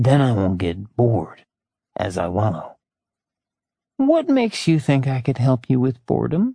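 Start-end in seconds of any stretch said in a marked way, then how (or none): 4.0-6.5 all-innocence, innocent-sounding tone. A woman answers a man's invitation, in an innocent voice. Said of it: "She asked in an innocent voice".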